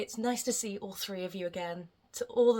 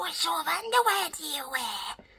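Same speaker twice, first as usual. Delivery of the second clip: pitched-up, squeezed cave creature voice; 9 semitones higher, 4 dB louder than usual. Repeating a question viewers often asked, in a Gollum voice. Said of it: "that sounded like Gollum".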